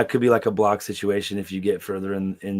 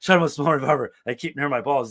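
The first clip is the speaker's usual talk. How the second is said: put-on out-of-breath voice; 6 semitones higher than usual. Retelling a movie scene where the characters are running: imitating someone out of breath. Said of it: "so he's, like, out of breath".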